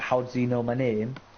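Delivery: ordinary delivery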